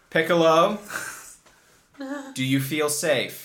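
loud calling voice. Voicing a character calling across to another character: shouting from across the way. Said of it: "Ella Moira shouts from across the way".

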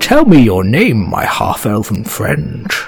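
swooping, charming dragon voice. Voicing a grinning dragon who charms a half-elven player: dragon voice. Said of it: "He grins a toothy grin, ... And he says".

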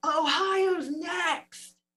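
mock, shrill, very high, loud yell. Telling a story, the speaker quotes the father-in-law running through the woods, retelling a scream. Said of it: "screaming, running through the woods, yelling".

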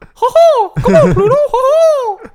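loud, squeaky delivery with the ho drawn out. Suggesting they do voice acting, the speaker shows off a Mickey Mouse voice. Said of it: "I could do a decent Mickey".

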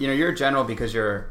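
ordinary talk

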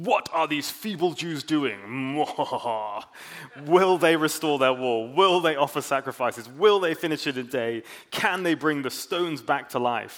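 cackling, gloating, put-on evil villain voice. Speaker acting out the threats from a bible verse, evil villain accent. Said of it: "I felt like they should have had a good accent".

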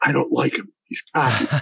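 hushed whisper, under the breath. Retelling what his wife whispered about the surgeon: imitating a whisper. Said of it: "my wife whispers to me".

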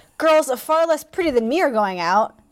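normal talking voice

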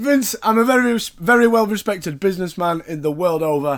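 ordinary delivery

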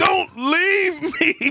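loud, very high-pitched sobbing, pleading tone. Imitating a man on a video crying after a breakup: imitating someone crying. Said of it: "on the video crying about his bitch".

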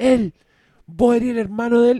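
high, loud, accusing yell. Retelling a man who kept mistaking them for someone's brother: retelling a man's shouting. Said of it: "el weón gritaba y decía".

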